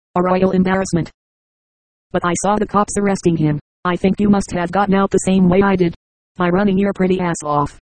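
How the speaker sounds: ordinary delivery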